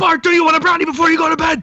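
very high, shrill, put-on cartoon scream. Retelling a cartoon scene, the speaker acts out a figure bursting through the door: screaming as Homer. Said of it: "running at him screaming, going".

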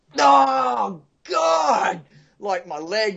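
very slow, high, pained scream, oh stretched out. Recalling being underwater after hurting their leg: retelling a scream of pain.

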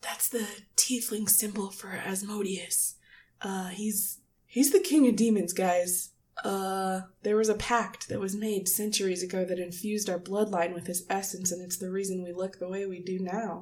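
nervous whispered put-on voice. Voicing a character who leans over to the group: whispering as Guile. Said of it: "Guile leans over and whispers to you guys".

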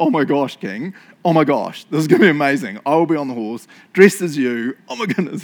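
loud, awed, gushing, excited babble. Retelling how Haman imagines the honor: imitating Haman's gushing. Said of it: "you can see him going".

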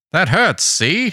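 put-on old-timey 1950s voice. Speaker voices the subject reacting to probes in his brain, in an old-timey 1950s voice. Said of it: "You can do your 50s voice".

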